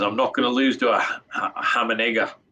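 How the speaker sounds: put-on Australian accent. Voicing what a winner might say in an interview, in a put-on aussie accent. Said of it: "how is that for an Aussie accent".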